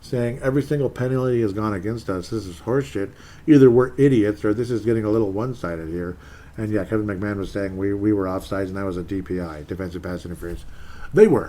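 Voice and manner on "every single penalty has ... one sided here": plain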